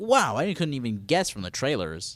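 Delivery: normal talking voice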